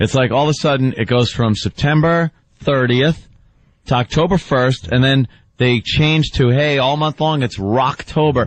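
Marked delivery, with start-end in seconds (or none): none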